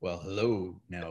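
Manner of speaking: very deep, slow, smooth voice. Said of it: "a Barry".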